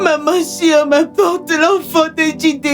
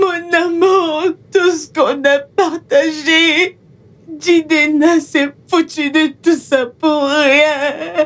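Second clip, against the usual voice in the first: tearful, weeping voice. A daughter tells her mother that Jidena betrayed her, crying. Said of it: "Arrête de pleurer".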